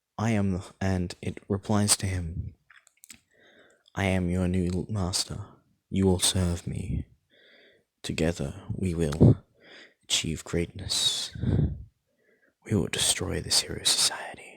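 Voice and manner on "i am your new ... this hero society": deep, cruel, sadistic, menacing villain voice. Retelling a story where a voice answers him, in a deeper, sadistic voice. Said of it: "his voice switches to a deeper, more sadistic voice".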